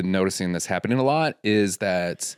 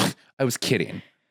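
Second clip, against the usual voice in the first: put-on, unconvincing sarcastic delivery. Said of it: "that didn't sound like you were kidding".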